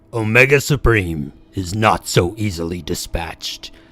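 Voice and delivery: dramatic trailer-style narrator voiceover. Speaker tries reading a Decepticon narration as a voiceover: voiceover voice. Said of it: "I'm going to try to do my best voiceover voice".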